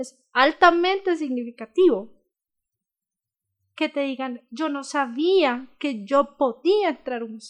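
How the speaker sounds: cracking, breaking, choked-up voice with emotion. Speaking about students on their first museum visit, voice breaking. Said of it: "y se me quiebra la voz".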